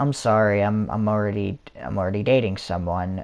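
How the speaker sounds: ordinary talk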